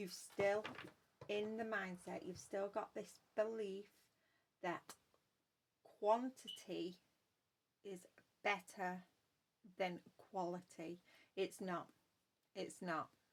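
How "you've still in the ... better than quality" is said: very slow, deliberate, halting, word by word. Repeating a point to the audience, saying it really, really slowly. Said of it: "I'm going to say that again really, really slowly".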